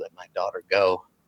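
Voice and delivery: quiet, hushed, low-key words under the breath. Voicing an old man confronting a player with his cane: saying it quietly. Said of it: "he says quietly".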